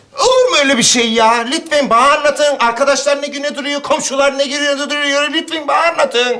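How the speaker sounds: very high-pitched, shrill, loud shouting. Neighbor begging a gloomy man to confide in him, shouting. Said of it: "Bağırma".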